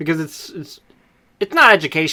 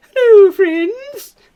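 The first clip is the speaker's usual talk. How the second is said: very high, loud, piping character voice; 7 dB louder than usual. Offering to do a little voice for the author: Mrs. Doubtfire voice. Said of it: "A little Missus Doubtfire voice".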